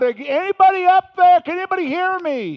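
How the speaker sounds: shrill, very high, loud shouted scream. Telling a story about a man left hanging on, imitating a man screaming out. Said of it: "he starts screaming out".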